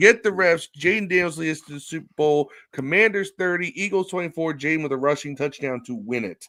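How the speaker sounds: usual speaking voice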